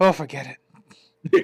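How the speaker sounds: offhand, casual, resigned giving-up tone. Retelling how guards react after losing sight: imitating Tenchu guards giving up. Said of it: "you break line of sight and they go".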